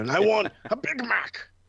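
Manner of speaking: shrill put-on voice, pitched way up, loud and slow. Imagining William Regal ordering at a drive-thru: William Regal impression. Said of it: "William Regal comes through, and he's just like".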